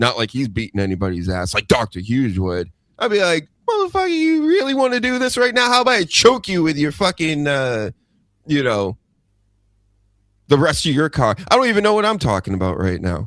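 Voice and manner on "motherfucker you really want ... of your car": put-on angry, fired-up voice with raised pitch. Saying what they would tell the man while watching: angry. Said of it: "That's how mad I'm getting".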